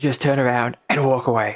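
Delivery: low, gravelly voice. Game master voicing a figure aiming a crossbow at the players: gravelly Batman voice. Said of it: "he just says in this gravelly voice".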